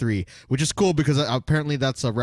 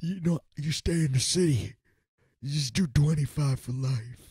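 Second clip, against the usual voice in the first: put-on strained old man voice, higher; 4 semitones higher, 3 dB quieter than usual. Retelling a character's line, imitating him straining to sound old. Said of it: "trying so hard to sound like an old man".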